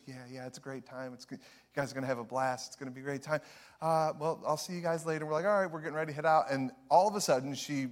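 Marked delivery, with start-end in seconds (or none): 0.1-5.2 kindly, soft-spoken, quiet, gentle voice. Retelling how a woman talks to the speaker's group before a festival, imitating a soft voice. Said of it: "She has a very soft kind of voice".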